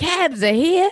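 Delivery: put-on loud, very high-pitched Jersey Shore accent. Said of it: "i'm doing poly d".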